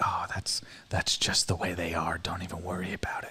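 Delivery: hushed, soft whisper, spoken on the quiet. Retelling a line from the girl the speaker is dating, imitating a whisper. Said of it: "she goes like in a whisper".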